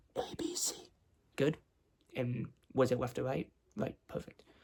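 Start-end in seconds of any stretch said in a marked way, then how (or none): 0.2-0.8 hushed whisper, barely voiced, soft. Doing a hearing test, whispering into one ear: whispering letters. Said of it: "I'm just gonna whisper letters and numbers".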